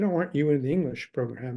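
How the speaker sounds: ordinary delivery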